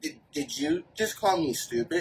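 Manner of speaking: affronted, offended, breathy whisper. Retelling a woman's reply after a remark: imitating an offended tone. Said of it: "she got offended".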